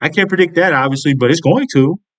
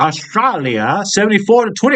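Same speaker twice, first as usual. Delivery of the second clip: slipping into a put-on British accent. Speaker reads out country tallies, slipping into a put-on british accent. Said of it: "Why am I doing a British accent?".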